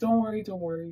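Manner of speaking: put-on soothing, consoling parent voice. Acting out a parent calming an anxious child: imitating a consoling parent. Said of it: "just trying consoling them like that".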